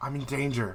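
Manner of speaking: barely-there, faint, soft half-whisper. Voicing a trapped character heard through a stone wall: half-whispered. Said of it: "almost kinda, like, whispered".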